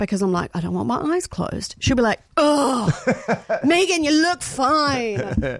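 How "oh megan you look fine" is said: play-acted, drawn-out, very slow exasperation. Describing how a woman answers her request to look, imitating an exasperated voice. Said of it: "And that exasperated voice".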